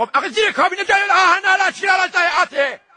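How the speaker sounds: shouting angrily.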